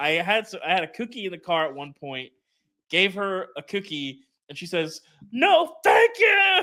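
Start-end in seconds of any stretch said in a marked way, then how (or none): 5.3-6.6 put-on very high, screamed child's shriek. Retelling giving their child a cookie during a meltdown, imitating a child screaming.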